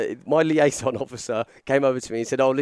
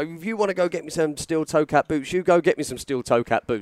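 angry, heated, insistent delivery at talking level; 4 semitones higher than usual. Retelling an argument with an office worker: retelling own shouting. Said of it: "So I start shouting at him".

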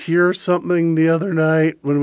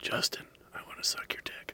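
very quiet, hushed, breathy whisper; 20 dB quieter than usual. Retelling what was heard at a drinking night: imitating a whisper. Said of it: "I hear this fucking whisper".

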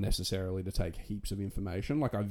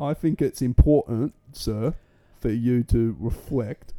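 clumsy put-on Cockney accent, loud and slow; 4 semitones higher, 7 dB louder than usual. Repeating the other speaker's line in a bad Cockney accent. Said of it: "Is that Cockney English? ... Like Russell Brand, I'm really bad at accents".

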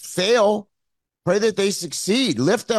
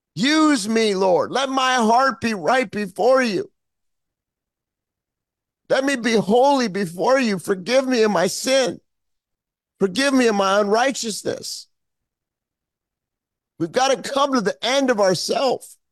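getting emotional, choked up; 3 semitones higher than usual. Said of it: "I'm getting a little emotional here".

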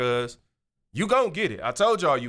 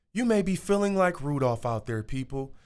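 put-on uplifting, inspirational motivational-speaker voice. Telling the Rudolph story, addressing listeners: put-on inspirational voice. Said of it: "Let me get in my inspirational voice".

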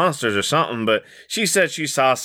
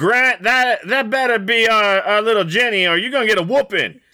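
shrill, very high holler climbing upward; 11 semitones higher, 3 dB louder than usual. Voicing an aunt yelling from the kitchen: yelling in character. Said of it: "she just yells out".

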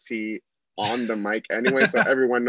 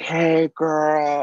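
put-on drunk-sounding speech, higher pitch; 6 semitones higher, 3 dB louder than usual. Retelling first meeting someone while hosting: imitating a drunk person. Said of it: "she's fully plastered".

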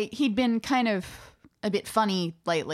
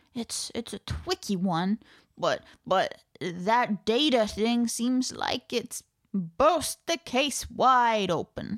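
slow, steady, drawn-out character voice. Voicing Patrick Copus, asked what he thinks of the case: Patrick Copus voice. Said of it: "[name] can do the Patrick Copus".

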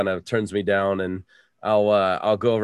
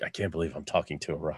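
muttered under breath, much quieter and lower; 5 semitones lower, 11 dB quieter than usual. While another character talks to the Bog, muttering under breath. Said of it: "Then I mutter him like".

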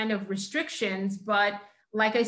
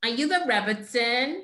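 put-on heavy, thick, laid-on Brooklyn accent. Retelling a woman who came over and asked a question, thick brooklyn accent. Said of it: "she's got a really thick ... good Brooklyn accent".

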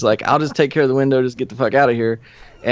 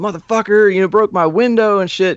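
yelling, pitched high; 7 semitones higher than usual. Retelling how the place's owner came out yelling at the speaker; imitating the shouting. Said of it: "he's yelling at me".

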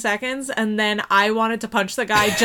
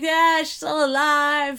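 put-on yelling, higher; 5 semitones higher than usual. Retelling a film scene where the maid finds the wife: imitating someone yelling.

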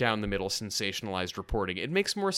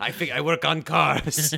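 put-on alien voice, higher and louder; 5 semitones higher, 6 dB louder than usual. Joking that Tim Allen recorded a favor: Watto voice. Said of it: "Watto in, in Star Wars Episode One".

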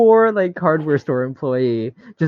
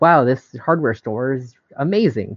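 ordinary delivery

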